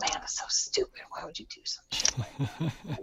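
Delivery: very quiet, whispered mumble muttered under the breath. Retelling own self-talk while watching own videos: imitating mumbling under breath. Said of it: "I'll mumble under my breath".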